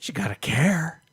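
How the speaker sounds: eerie manner. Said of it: "You don't have to say it in such a creepy fashion".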